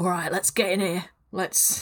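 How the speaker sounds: put-on London Cockney accent. Right after action is called, the speaker opens the scene in a Cockney accent. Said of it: "I don't know why I'm doing a Cockney accent now".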